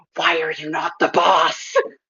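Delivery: slow, drawn-out, hushed half-whispered aside. In a role-playing game, the speaker's character half-whispers a question to another character: half-whispering. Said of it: "I gotta whisper".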